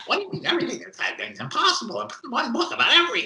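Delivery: squeaky voice, very high up and swooping. Retelling an old conversation, the speaker gives the man's reply: high squeaky Murray Rothbard voice. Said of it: "who had a high squeaky voice".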